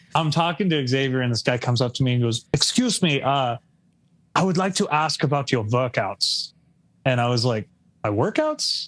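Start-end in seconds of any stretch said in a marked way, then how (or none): 2.6-6.6 put-on German accent. Retelling how a stranger approached the speaker, doing a german accent. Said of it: "I'm going to do the accent".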